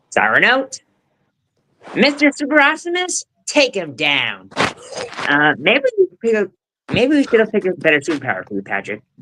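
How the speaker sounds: high, swooping, sing-song cartoon character voice. Performing a few lines from Sponge Out of Water for the others, SpongeBob impression. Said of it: "my SpongeBob impression from Sponge Out of Water".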